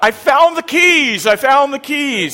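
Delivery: mock, very high, loud, drawn-out triumphant call. Re-enacting what they usually call out of the corner of the house, retelling a triumphant announcement. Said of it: "And then I say quite triumphantly".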